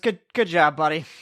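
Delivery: mildly exasperated, faintly fed-up tone. A character praises a teammate who just survived a fight: a little exasperated. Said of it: "a little bit of exasperation in Kevin's voice".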